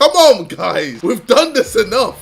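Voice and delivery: high, loud, exasperated voice with laughter.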